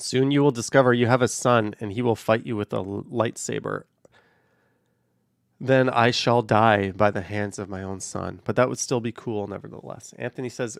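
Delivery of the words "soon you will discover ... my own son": ordinary delivery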